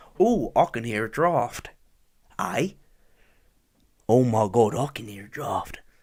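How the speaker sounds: put-on Australian accent on every word. Speaker imagines an australian saying a sentence, in a mock australian accent. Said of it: "you have to be Australian to say that".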